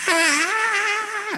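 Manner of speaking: very high monster shriek.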